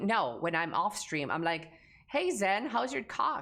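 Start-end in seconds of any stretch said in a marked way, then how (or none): 2.1-3.4 mellow, laid-back, chilled-out, slightly high voice. Streamer shows how they greet a mod off stream, chilled-out, mellow greeting. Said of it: "way more chilled out and mellowed out".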